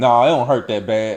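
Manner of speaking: ordinary talk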